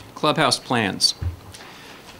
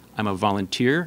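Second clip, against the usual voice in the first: ordinary talk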